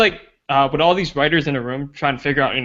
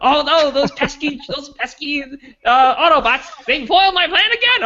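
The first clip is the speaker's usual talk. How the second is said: hammed-up cartoon villain voice, very high and slow; 12 semitones higher, 4 dB louder than usual. Mocking how the film's villain acts, like a Scooby-Doo villain. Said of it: "he acts like a Scooby Doo villain".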